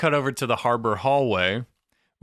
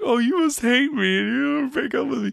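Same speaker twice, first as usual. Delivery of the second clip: abrupt sad turn, pitched very high; 14 semitones higher than usual. Retelling a TV scene where a character fears a breakup: imitating someone suddenly sad.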